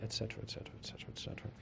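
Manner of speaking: hushed, conspiratorial whisper.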